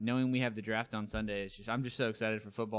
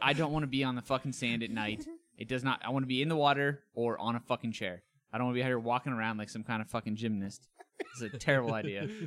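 normal talking voice

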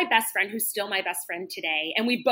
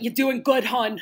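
imitated Delco accent. Imitating how people from Delco talk: imitating a Delco accent. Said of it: "They all they talk like that".

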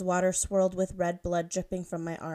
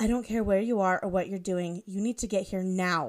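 angry tone. A woman on the phone demands someone come at once, angry. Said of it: "she said angrily into her phone".

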